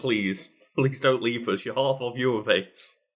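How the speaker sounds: mock pleading, put-on begging voice. Imitating Carl begging the American fans not to leave: imitating Carl pleading. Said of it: "Carl's like".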